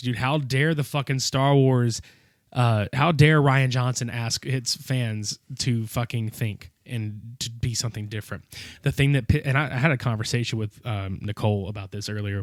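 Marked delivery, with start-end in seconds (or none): none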